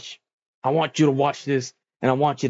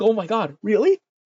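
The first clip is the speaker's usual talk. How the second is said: put-on high, giddy, overjoyed and ecstatic delight; 7 semitones higher than usual. Retelling a submission match challenge, the speaker imitates Gulak, mock-ecstatic. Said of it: "And Gulak's ecstatic".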